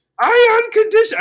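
very high, very loud, belted puppet voice. Retelling Bella's movie line while trying a Miss Piggy voice. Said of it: "I'm trying to do Miss Piggy".

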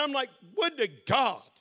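plain

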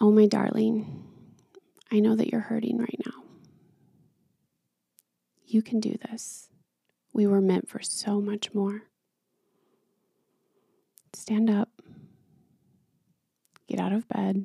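soft angel-like voice. Acting out what the heart said when ready to quit: voicing one's heart speaking. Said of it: "it would say it like this".

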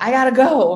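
loud, high shout. Recalling rushing out after a phone call, the speaker retells shouting at everybody. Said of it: "I just like shouted at everybody".

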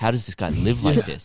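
mock mumbling in a chef voice. Recounting how the chef reacted in the kitchen, imitating Ted mumbling. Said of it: "He was just like mumbling".

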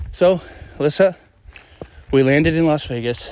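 slightly winded. Podcast host recording while hiking with alyssa, a little out of breath. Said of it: "so I'm a little out of breath".

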